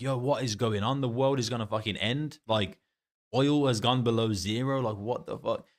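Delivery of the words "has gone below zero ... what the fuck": normal talking voice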